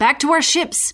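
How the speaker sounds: usual speaking voice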